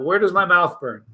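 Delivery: ordinary talk, nothing marked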